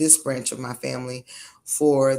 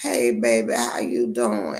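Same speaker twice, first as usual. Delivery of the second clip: put-on old grandma voice, lower, much slower; 4 semitones higher than usual. A grandmother mimics the rocking-chair kind of grandma she is not, in an old grandma voice. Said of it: "sitting in the rocking chair talking like".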